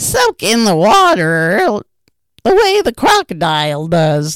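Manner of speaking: laughing, loud and swooping, water stretched. At the river, the parrot answers the little elephant Suki, laughing. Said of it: "laughed the parrot".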